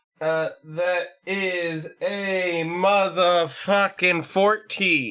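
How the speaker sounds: slow, high, drawn-out exclamation.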